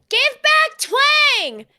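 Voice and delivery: high, loud, slow yell. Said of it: "And yells".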